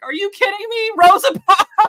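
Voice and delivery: shrill, loud, furious, incredulous outburst of outraged disbelief. Retelling a reaction to one of their videos, imitating being mad. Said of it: "We were so mad".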